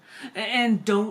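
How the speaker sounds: plain reading voice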